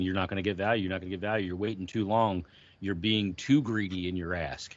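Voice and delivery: ordinary talk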